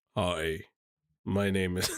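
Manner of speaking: very deep, low, soft bass voice. Asked by another speaker to fake a man's deep voice, imitating his deep voice. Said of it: "should make one of his deep voice".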